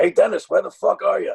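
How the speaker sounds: called out loud and rough. Retelling hearing the comedian call down from upstairs: George Carlin impression. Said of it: "that familiar voice that everyone knows from T V".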